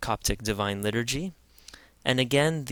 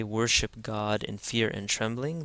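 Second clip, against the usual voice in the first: ordinary talk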